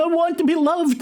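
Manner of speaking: piercing, shrill, very high scream. The narrator voices a thrashing arm from the back seat with a shrill scream. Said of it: "you hear a shrill voice scream".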